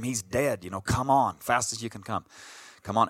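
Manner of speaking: hurried, urgent calling, but kept contained. Retelling screaming for help while badly bleeding: retelling own past scream. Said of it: "and I scream".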